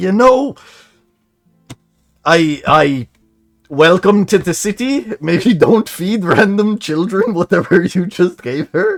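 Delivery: very high, loud, winded, heavy panting breath. Voicing an elven man who stops in front of the listeners, breathing heavily. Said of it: "breathing heavily".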